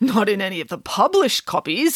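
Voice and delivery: plain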